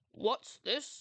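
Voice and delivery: put-on pirate captain voice. Narrator describing reading Peter Pan aloud, doing a Captain Hook voice. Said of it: "I love being hooked because he's like".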